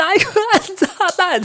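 put-on shout. Recounting a game round, the speaker reenacts calling to teammates, retelling a shout into headset. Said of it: "我就大喊".

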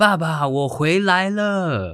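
sudden, very slow, high, loud, drawn-out call. Retelling how mom suddenly called out at grandfather's stone house, retelling a sudden shout. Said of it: "我妈突然就大叫说".

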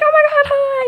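loud, very high-pitched voice. Describing how taiwanese people greet strangers, imitating a loud greeting. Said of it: "they're very, like, loud".

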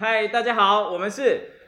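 very high-pitched, loud shouting by a group. Greeting the audience after being asked to shout together: shouting loudly. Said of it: "现在还是要讲很大声，来，一起喊".

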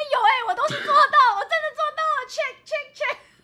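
very high, very loud, delighted, gleeful exclaiming. Imitating listeners who happily tick off every step: imitating happy listeners. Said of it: "说不定还很开心，".

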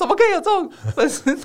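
put-on very high-pitched indignant, outraged shriek. Retelling the speaker's mother's reaction to the fan club, retelling mom's scream. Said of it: "就尖叫说".

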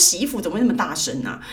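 ordinary delivery

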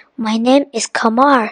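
plain reading voice

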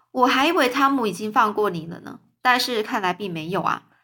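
ordinary delivery, nothing marked

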